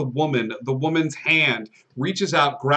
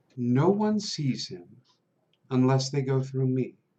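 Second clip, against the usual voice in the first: close, secret, hushed half-whisper, as if in the ear; 4 dB quieter than usual. Voicing a guard who leans down to a player: half-whispering in ear. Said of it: "She will lean down to where you are and whisper in your ear".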